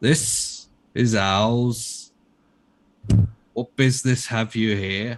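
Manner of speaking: called out loudly, with ours stretched long. A narrator voices Ulrich calling out to a group at a ruin, Ulrich's very deep baritone voice. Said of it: "calls out in a very deep baritone voice".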